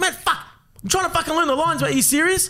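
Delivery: acted, very high, fed-up yell with swearing. Retelling yelling at a crew member during filming: imitating own yelling. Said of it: "I yelled at him".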